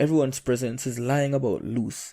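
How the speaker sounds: plain reading voice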